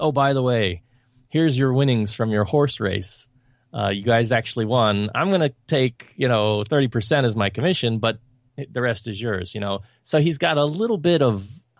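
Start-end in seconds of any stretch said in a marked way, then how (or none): none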